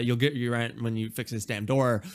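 ordinary talk

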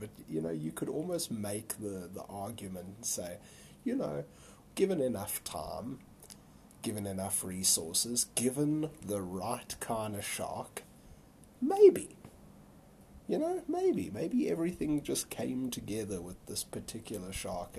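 talking through giggles. Speaker discusses a conspiracy theory, giggling while talking. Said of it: "I'm giggling just thinking about it".

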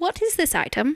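put-on sudden, formal, very British accent. Playing a halfling asking about an item, in a british accent. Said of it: "You have turned very British all of a sudden".

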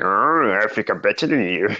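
put-on alien character voice. A speaker describes a habit of boasting, doing a Yoda impression. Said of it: "do me freaking Yoda impression".

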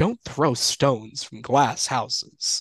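heavy, slow Southern drawl, laid on thick. Retelling a funny bit from a show, quoting him with a thick Southern drawl. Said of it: "like with a thick Southern drawl".

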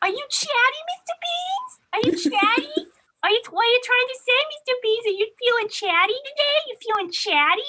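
very high, loud cutesy cooing animal voice. Retelling how Emma chats to her meowing cat: imitating Emma's cat voice. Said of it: "Emma has the funniest like cat voice".

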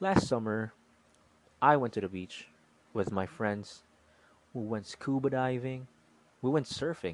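brief clean pauses between thoughts, no fillers. Reframing a summer story as a speaking demo: short pauses between thoughts. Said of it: "reframe the same story, but with a pause in between thoughts".

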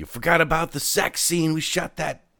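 high-pitched, shrill yelling. Retelling calling from an upstairs window to a man getting into a cab: yelling. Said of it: "i'm yelling at him".

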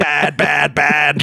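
put-on demonic voice. Speaker retells a scene where a daughter puts on her Satan voice, in Satan voice. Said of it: "puts on her Satan voice".

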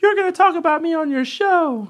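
very high, girlish, put-on young woman's voice. Retelling messages from a young lady, imitating a young lady's voice. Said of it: "I just pictured that's how her voice sounds".

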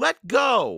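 very high-pitched, loud yell. Reading Annie shouting into Captain Bones's face: shouted. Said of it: "Annie shouted into his face".

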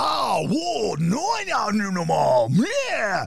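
loud yell. Imitating people at a massage place who are always yelling: imitating people yelling. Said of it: "They're always yelling".

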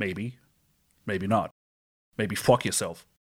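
put-on Boston accent. Answering a request for a film one-liner in a Boston accent. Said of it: "your best Boston accent".

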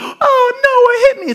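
put-on very high, very slow, whiny child voice, "oh" stretched. Retelling a daughter blaming her sibling in the car: imitating Izzy. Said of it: "she goes".

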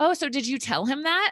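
mock offhand, casual, nonchalant tone, very high. Retelling what the session leader asked: imitating someone speaking nonchalantly. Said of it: "nonchalantly is like".

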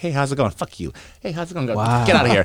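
offhand, blunt, careless tone, pitched high. Imitating a friend who approached girls without caring, imitating a careless friend. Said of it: "this guy would just be like".

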